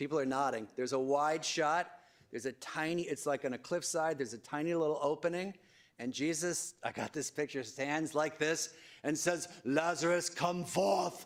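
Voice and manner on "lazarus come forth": put-on pitched-up grand British accent. Speaker reenacts Jesus from a remembered film scene, in a British accent. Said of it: "in a British accent".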